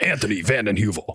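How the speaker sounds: cool announcer-style delivery. Announcing another person's name as an honorable mention, cool announcer voice. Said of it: "in my cool announcer voice. But I'll do it again".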